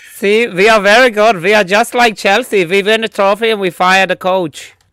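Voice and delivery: terrible fake Dutch accent, loud and high-pitched. Joking about a club firing its coach, in a bad dutch accent. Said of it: "That is the worst Dutch accent I've ever heard".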